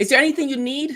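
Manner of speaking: pushy, high-pitched, loud store clerk voice.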